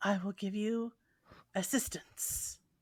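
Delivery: voice dropped a little. A storyteller voices a character who lowers his voice to offer help: lowered voice. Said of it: "he lowers his voice a little bit and says".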